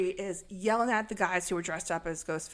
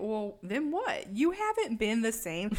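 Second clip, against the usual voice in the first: ordinary talk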